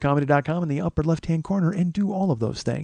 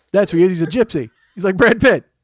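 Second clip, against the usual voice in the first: ordinary talk, nothing marked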